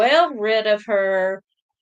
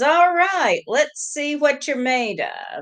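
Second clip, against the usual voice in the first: smug, cocky, taunting tone, pitched up; 6 semitones higher than usual. Retelling a party guest's challenge before a card reading: imitating a smirking challenge. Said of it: "and with a smirk".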